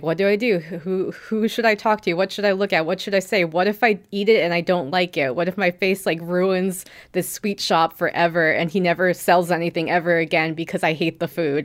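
plain

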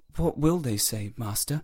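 mumbled, muttering, words half swallowed. The boy shrugs and answers his master, mumbling. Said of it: "he mumbled".

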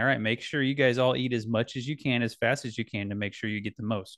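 plain

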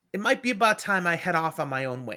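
ordinary talk, nothing marked

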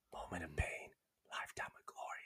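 barely voiced, gasping whisper between breaths. Repeating a phrase said in the head while running up hills: slight whisper. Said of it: "it's a slight whisper".

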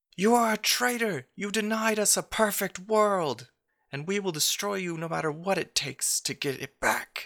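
very high, enraged, furious yell. Voicing an enemy druid in a fight, yelling at a traitor: yelling in character. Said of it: "yells out in Elvish".

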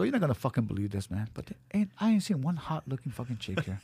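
ordinary talk, nothing marked

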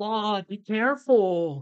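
mock very high yelled call. Recounting a girl yelling at a passing band member, retelling a yell. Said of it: "some girl yelled out".

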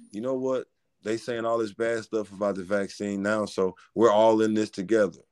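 ordinary delivery

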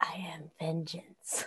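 very quiet, soft, hushed whisper. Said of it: "I'd also like to whisper to it".

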